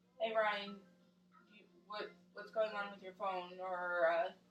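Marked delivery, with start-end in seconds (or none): 0.2-3.6 mock pointed, needling, passive-aggressive sarcasm. Retelling own past remark about phone use: imitating own sarcastic passive-aggressive remark. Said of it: "might be a little bit sarcastic and passive aggressive and might be like".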